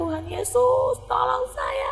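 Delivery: high, slow, desperate pleading cry. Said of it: "Jadi saya teriak-teriak".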